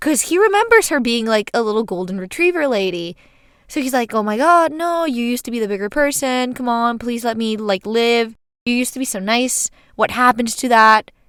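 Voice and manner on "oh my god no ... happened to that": put-on very apologetic, dramatic pleading. Retelling an ex begging a former partner to spare him: imitating a super sorry plea. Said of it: "super sorry".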